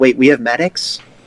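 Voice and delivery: ordinary talk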